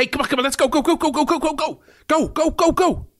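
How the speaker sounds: acted-out urgent, hurried delivery, pitched high. Retelling the morning rush to school or work: acting out own urgent hurrying. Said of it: "And I have the same urgency in my voice".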